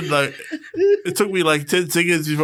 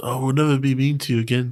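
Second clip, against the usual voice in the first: plain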